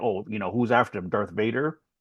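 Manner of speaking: sarcastic tone. Retelling an earlier remark about a muffled villain: retelling a sarcastic remark. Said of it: "I made a sarcastic remark".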